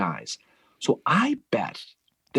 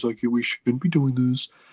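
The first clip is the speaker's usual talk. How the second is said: put-on gloomy, complaining voice. Retelling an officer's objection to attacking: imitating a Debbie Downer voice. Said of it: "probably in his Debbie Downer voice".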